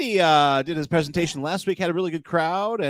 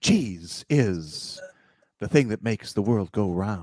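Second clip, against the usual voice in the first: halting, dramatic delivery at very low pitch; 9 semitones lower than usual. Asked by another speaker to do a William Shatner, the speaker obliges: William Shatner impression. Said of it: "do a William Shatner".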